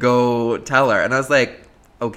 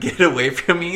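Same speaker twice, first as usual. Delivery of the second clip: put-on yelling, called out high and light; 6 semitones higher than usual. Retelling how they kept yelling the line all night: imitating their yelling. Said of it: "So we just kept yelling".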